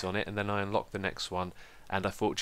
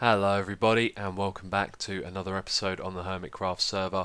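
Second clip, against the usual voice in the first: dull, boring, level, flat-pitched monotone drone. A video host opens a Hermitcraft episode the way he used to talk, monotone and boring. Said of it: "this is how I used to talk in my older videos".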